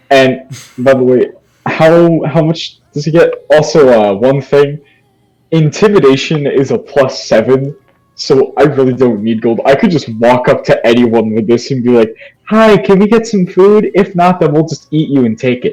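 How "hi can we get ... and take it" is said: high, sweet, innocent-sounding voice. A player speaks as their character Rosalind, in Rosalind's sweet voice. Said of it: "the sweet voice of Rosalind contrasted by the threats".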